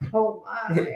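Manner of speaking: quick, small, understated "oh my". Showing the other speaker how to do the Sulu line: Sulu "oh my". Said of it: "you just gotta go the".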